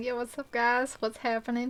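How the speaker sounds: slight southern Texas drawl. Describing slipping into a drawl around Texans, bit of a Texas drawl. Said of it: "going into a bit of a drawl".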